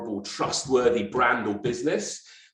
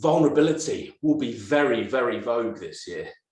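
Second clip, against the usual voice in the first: clearly sarcastic tone of voice. Announcing the second trend expected this year: sarcastic tone. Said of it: "the sarcasm in my voice".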